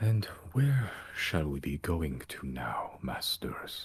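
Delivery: full, resonant, sonorous voice. Voicing a flying creature asking its masters where to go, deep, resonant voice. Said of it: "you hear in a deep, resonant voice".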